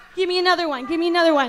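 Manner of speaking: normal talking voice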